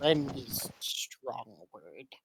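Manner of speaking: very quiet, low, slow mutter under the breath. As she leaves, a character speaks to himself very quietly under his breath. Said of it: "very quietly says under his breath".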